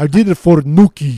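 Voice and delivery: booming, loud, over-the-top exaggerated Russian accent. Trying to sound German, the speaker lands on an over-the-top Russian accent. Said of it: "You sound Russian".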